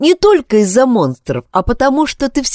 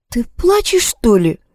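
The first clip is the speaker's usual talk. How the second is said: tentative, uncertain and hesitant. Kris, hearing Yana's voice change mid-speech, asks her: uncertain question. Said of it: "неуверенно произнесла Крис".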